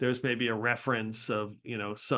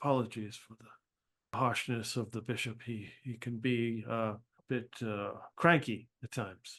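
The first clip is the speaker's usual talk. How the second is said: really low voice, quieter and slower; 5 dB quieter than usual. A game master voices a character speaking of the bishop: really low voice. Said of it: "his voice gets really low".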